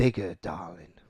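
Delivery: low put-on pirate voice, pirate accent on darling. Giving a line for someone to guess its source, in a pirate Johnny Depp voice. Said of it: "said "darling" in like a pirate Johnny Depp".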